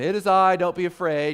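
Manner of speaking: loud, sarcastic delivery. Retelling the Gospel scene where Jesus answers frightened disciples: sarcastic Jesus line, acted. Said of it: "Hence again, the sarcasm".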